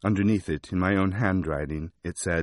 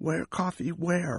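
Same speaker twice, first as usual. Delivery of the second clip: small, tiny croaking voice, pitched very high; 10 semitones higher, 4 dB quieter than usual. The narrator speaks to a man propped against a wall, tiny croaking voice. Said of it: "I croaked in a tiny voice".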